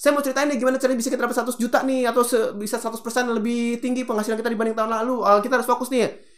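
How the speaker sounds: rushed, too-fast delivery, high pitch, rattled off.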